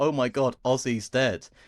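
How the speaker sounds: ordinary delivery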